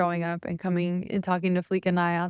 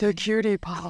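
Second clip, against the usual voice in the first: put-on, fake seductive, sexy voice. Recording a DJ tag for an audio memo, put-on sexy voice. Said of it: "I gotta put my sexy voice on".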